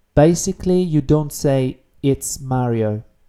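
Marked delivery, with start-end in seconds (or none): none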